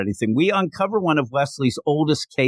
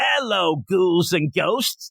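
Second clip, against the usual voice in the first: Boston accent, pitched up higher; 5 semitones higher than usual. Getting into character as Dead Man, a supernatural tour guide, wicked Boston accent. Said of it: "wicked, you know, Boston accent".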